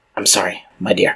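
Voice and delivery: hushed, quiet whispered voice. The town's elder lays a hand on a woman's shoulder, whispering. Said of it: "he whispers".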